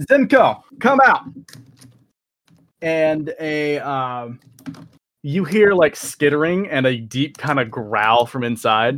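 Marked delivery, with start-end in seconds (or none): 0.0-1.2 very high, shrill, loud yell. A narrator voices a woman calling out toward the tower, yelling out. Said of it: "just yells out".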